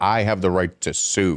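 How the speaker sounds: usual speaking voice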